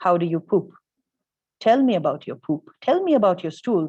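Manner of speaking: dry, matter-of-fact, clinical, dead serious, no joking. Imitating a straight-faced Vaidya asking about stools: imitating a deadpan Vaidya. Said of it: "a very straight-faced Vaidya might probably ask you".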